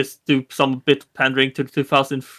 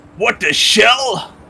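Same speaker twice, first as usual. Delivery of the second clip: high exaggerated New York accent; 8 semitones higher, 4 dB louder than usual. Speaker quotes a character's catchphrase in Ralph's New York accent. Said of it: "Ralph is like very stereotypically New York".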